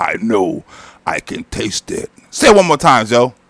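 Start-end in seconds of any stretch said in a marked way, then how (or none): 0.0-2.1 very low, slow, drawn-out, creepy vampire voice. Repeating a quoted line with another speaker, in a vampire voice. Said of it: "That even sound more like a vampire".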